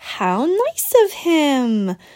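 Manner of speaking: sarcastic tone. Natalie answers Mary, remarking sarcastically. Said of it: "Natalie remarked sarcastically".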